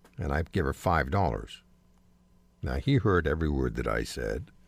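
ordinary talk

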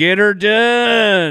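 put-on southern comedian voice. Showing how a comedian would say the line: Larry the Cable Guy impression. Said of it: "Larry Cable Guy would go".

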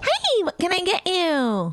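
very high, swooping, sing-song waitress voice. Describing the voice waitresses use with customers, imitating a high-pitched waitress voice. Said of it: "You just let that high-pitched".

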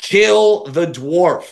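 high, mild, jeering hollered yell. Retelling how a guy leaning out a racing truck yelled: imitating someone yelling. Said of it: "yells out".

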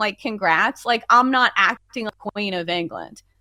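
ordinary talk, nothing marked

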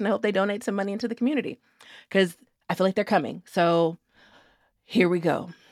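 resigned, halting, disappointed, let-down delivery. Talking about baseball players coming to town; disappointed resignation. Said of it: "the disappointed resignation in your voice".

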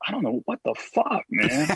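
soft and easy delivery. Explaining how they do impressions, the speaker demonstrates: Joe Rogan impression. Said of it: "if I want to do a Rogan, I just go".

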